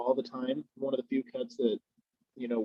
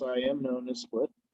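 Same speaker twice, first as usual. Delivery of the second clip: ordinary talk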